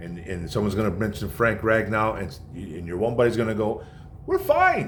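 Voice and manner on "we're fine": squeaky, pitched-up high voice. Imitating a buddy talking about the Detroit Lions, in a high-pitched voice. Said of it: "with that high-pitched voice".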